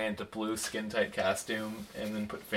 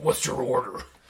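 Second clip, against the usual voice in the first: rough, gruff caped-hero voice; 3 semitones higher, 4 dB louder than usual. Joking about him taking an order at the counter, in a rough Batman voice. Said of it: "I wish he had that rough Batman voice".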